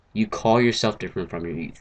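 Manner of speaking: ordinary talk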